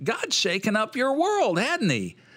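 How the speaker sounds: very high, swooping, whiny voice. Retelling Buddy's chapel message after he smacked the wall, imitating his whiny voice. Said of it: "In his kind of whiny voice".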